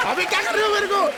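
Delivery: high, loud, panicked pleading.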